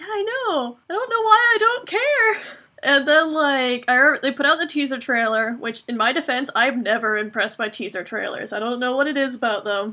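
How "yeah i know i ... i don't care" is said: high, tearful voice. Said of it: "I'm like".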